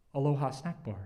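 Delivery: put-on voice with a small tremor. Retelling a man's words as friends look on, with a small tremor. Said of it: "There is a small tremor in his voice when he speaks".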